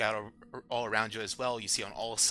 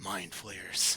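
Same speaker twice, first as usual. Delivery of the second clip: half-whispered, breath sucked in through teeth; 3 semitones lower, 4 dB quieter than usual. Narrator of a tabletop game voices Sartell's line: half-whispering. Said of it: "she whispers her next words and says".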